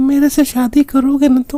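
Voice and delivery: high-pitched, fake, sweet girl voice.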